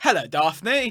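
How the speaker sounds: fake British accent. Retelling a scene from a show's guest character: american's bad british accent. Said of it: "he's clearly American, the guy".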